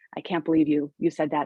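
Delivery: plain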